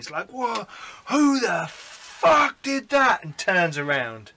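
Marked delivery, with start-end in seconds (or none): 0.3-3.2 very high, very slow, drawn-out agonised howl. Voicing a character struck in the shoulder by a crossbow bolt: screaming in pain. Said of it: "he screams in pain".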